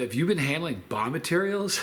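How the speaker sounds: ordinary talk, nothing marked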